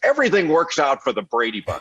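mock mad, indignant, high, swooping angry griping. Speaker retells what a man watching a Brady Bunch rerun said to him, imitating someone angry. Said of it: "and he's like all mad".

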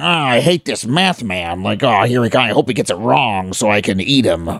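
low, villainous, muttered grumbling under the breath. Imitating a TV villain who complains about the hero: imitating Mister Glitch grumbling. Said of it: "grumbling under his breath".

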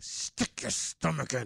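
hushed whisper pushed through clenched, gritted teeth. Recalling how mom corrected her at the table, imitating mom's gritted teeth. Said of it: "she did it with gritted teeth".

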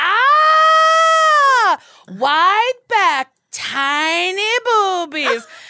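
mock full-volume, very slow, blunt pronouncement. Speaker quoting the lady at her bra fitting, retelling her saying it at full volume. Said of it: "she said this at more than full volume".

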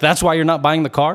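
imitated angry tone. Retelling how a car seller answered a buyer: imitating an angry seller. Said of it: "really angry".

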